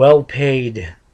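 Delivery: emphasis on well-paid. Mentioning what the doctors have told about recovery: stress on well-paid. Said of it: "and I stress that word".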